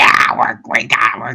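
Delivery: gremlin-like voice. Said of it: "her gremlin voice".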